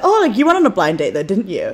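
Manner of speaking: ordinary delivery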